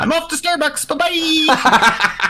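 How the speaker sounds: pretend angry shouting. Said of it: "They just want their moment of yelling".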